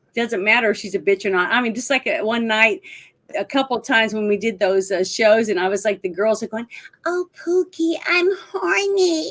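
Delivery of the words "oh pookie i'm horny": put-on high, slow cooing baby talk. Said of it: "Like, baby talk all the time".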